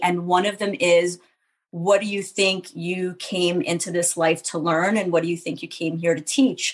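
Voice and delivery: ordinary talk, nothing marked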